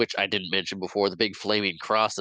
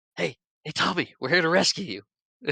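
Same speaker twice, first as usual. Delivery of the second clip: put-on whisper, higher pitch; 9 semitones higher than usual. Retelling a film scene where characters sneak up to Tommy: imitating characters whispering. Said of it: "they start whispering to".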